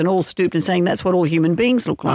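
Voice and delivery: ordinary talk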